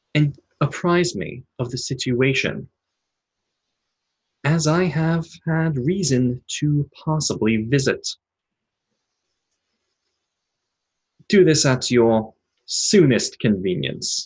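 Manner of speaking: almost familiar voice, warped, distorted and garbled. Voicing a flickering hologram's recorded message to a player: distorted voice. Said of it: "an almost familiar voice, but distorted".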